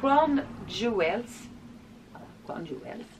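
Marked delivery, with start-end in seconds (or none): 0.0-1.2 bad, clumsy English accent. Speaker showing nail polishes reads a shade name in a bad english accent. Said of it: "j'ai un accent anglais pourri".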